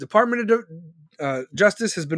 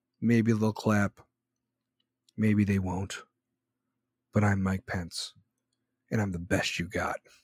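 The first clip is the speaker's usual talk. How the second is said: very low, slow monotone drone, every word dragged flat; 11 semitones lower, 7 dB quieter than usual. Mocking how Mike Pence talks, the speaker does a slow monotone Mike Pence impression. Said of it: "he talks like this, very slow".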